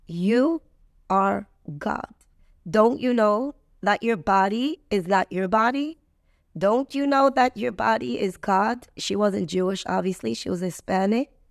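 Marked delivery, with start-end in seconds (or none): 0.1-8.8 acted, very firm, unwavering, insistent tone. Retelling what a caregiver said very close up: imitating someone speaking firmly. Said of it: "she said it very firmly".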